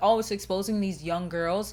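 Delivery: ordinary delivery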